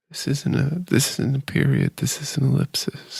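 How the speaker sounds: breathless, hushed, whispery delivery. Doing an impression of a movie's airport scene, whispery movie scene impression. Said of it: "it's like so fucking whispery".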